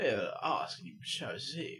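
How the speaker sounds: posh, upper-class English toff voice. Reading out an email, voicing its writer as a posh toff. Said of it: "I imagine he's some sort of toff now".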